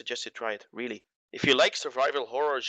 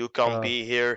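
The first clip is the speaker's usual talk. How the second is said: put-on flat robot monotone; 3 dB louder than usual. Describing the game's security robots, the speaker voices them: monotone robot voice. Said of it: "Those robots will protect it. Say".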